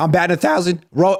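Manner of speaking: voice breaking and cracking mid-word, pitching up. Guest answering the host's greeting on the program, voice cracking. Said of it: "Ooh, my voice cracked".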